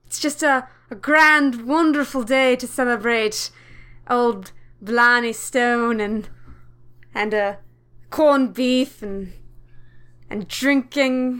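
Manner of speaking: fake Irish accent drifting into British. Returning a st. patrick's day greeting, fake irish accent drifting british. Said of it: "That accent's gone a little British there".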